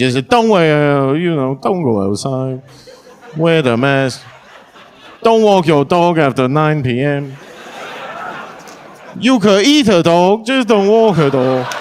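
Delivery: slow, put-on Chinese accent. Act out Tam repeating everything Fauci said, as a Tam impression in a Chinese accent. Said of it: "but in a Chinese accent".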